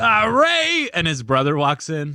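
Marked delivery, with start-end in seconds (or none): 0.0-0.9 very high-pitched, loud cry in a dad voice. Acting out the dad walking in on the couple: imitating Ray's dad. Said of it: "And then his dad walks in".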